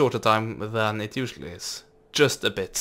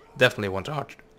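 voice breaking, cracking in the middle of a word. A player deciding which units to get in a game, voice cracking. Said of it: "voice crack".

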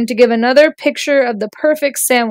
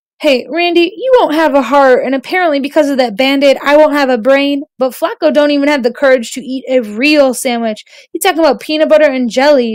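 plain

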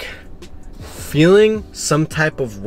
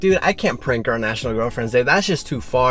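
ordinary talk

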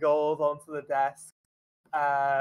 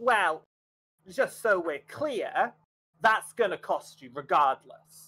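put-on teeny, tiny little goblin voice; 3 semitones higher than usual. Voicing a tiny goblin answering a question about a transaction, tiny goblin voice. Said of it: "and it's a teeny tiny little goblin".

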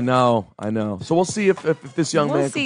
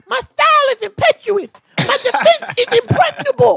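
put-on baby boxer voice; 7 dB louder than usual. Joking about a biopic actor playing Mike Tyson: stupid joke Mike Tyson voice. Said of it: "That's the stupid joke version".

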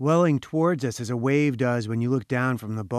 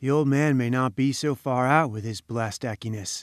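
ordinary delivery

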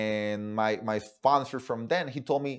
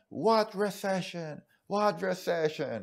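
mock yelling, high and drawn-out; 8 semitones higher than usual. Retelling how a woman at an event opened a briefcase: imitating a woman yelling. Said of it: "she starts yelling".

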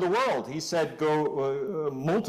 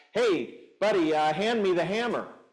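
light, called-across delivery; 3 semitones higher than usual. Acting out a builder at the tower calling to another: yelling. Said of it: "he yells out".

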